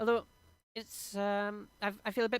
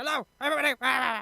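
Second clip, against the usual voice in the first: loud shouting voice; 4 semitones higher, 7 dB louder than usual. Speaker shows how he sounds talking over music in his headphones, shouting.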